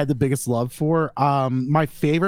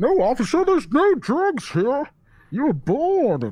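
put-on villain voice; 10 semitones higher than usual. On a podcast episode about Batman, a host does a bit, Bane voice. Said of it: "enough Bane".

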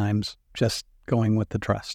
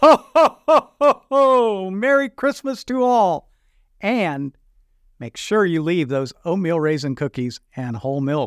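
slow, loud, festive sign-off voice; 7 semitones higher, 5 dB louder than usual. Ending the episode after being asked for a ho ho ho: festive ho ho ho christmas greeting. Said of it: "leave us with maybe a ho, ho, ho and a Merry Christmas".

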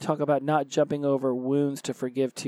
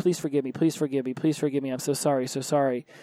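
mock badgering, pleading tone. Retelling badgering someone for forgiveness: mock badgering plea. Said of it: "I felt like I would badger them".

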